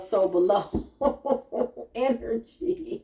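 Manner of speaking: high, slow laughing delivery. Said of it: "I'm laughing".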